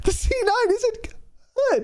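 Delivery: play-acted very high, furious raging shriek. Recounting how Jake died and lost his mind, imitating Jake's scream. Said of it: "he screams".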